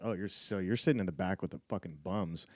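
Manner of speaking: ordinary talk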